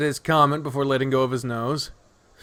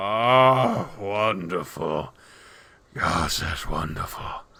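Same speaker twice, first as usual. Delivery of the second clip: slow, drawn-out, blissful, contented groan on oh; 8 semitones lower, 4 dB quieter than usual. Reading a story aloud, voicing the Emperor being scratched: blissful groaning. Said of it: "bellows out a blissful groan".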